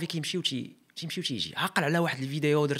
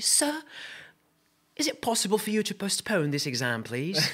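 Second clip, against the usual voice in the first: put-on British accent, much higher; 3 semitones higher than usual. Retelling a plea in class when everybody panicked before an exam; put-on British accent. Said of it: "british accent".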